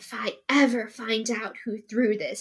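hushed whisper. Recounting the story, voicing Snape's line as he whispers, whispered Snape line. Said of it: "Snape whispered".

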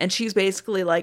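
ordinary delivery

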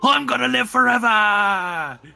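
drunken shouting in a put-on character voice. Playing a drunk character, shouting to everyone in a noisy room: drunken in-character shout. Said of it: "I shout to everyone else".

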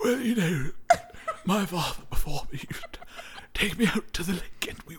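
put-on elderly posh British accent. Put on the spot, the speaker tries out an old british person, in an old aristocratic british voice. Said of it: "An old like aristocratic yes. like British person".

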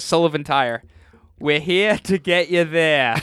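put-on bad Boston accent. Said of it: "local ads with the worst Boston accents".

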